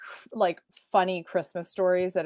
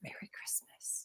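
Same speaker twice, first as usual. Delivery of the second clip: soft, slow, weird, creepy whisper. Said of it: "weirdly whispers it".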